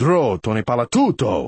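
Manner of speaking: low, deep fatherly voice. Acting out the father's side of a family argument, in a loud, low voice. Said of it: "Loud, low voice".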